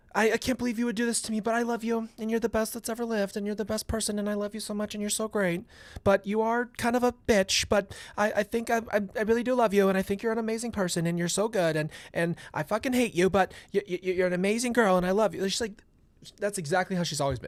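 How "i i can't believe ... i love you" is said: put-on syrupy, condescending, sweet-and-salty gushing tone. Mocking how Lori talks, sweet then insulting: imitating Lori, condescending. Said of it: "It's so condescending".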